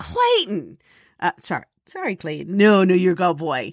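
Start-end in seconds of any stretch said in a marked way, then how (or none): 0.0-0.8 put-on, high-pitched calling out. Retelling the moment the cat deleted a perfect take: retelling own yell. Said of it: "And I yelled".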